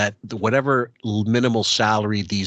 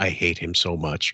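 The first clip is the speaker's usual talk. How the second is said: put-on quiet under-breath mutter, lower pitch; 5 semitones lower, 4 dB quieter than usual. Retelling what she said off the phone: imitating someone speaking under breath. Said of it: "it was Sotto Voce".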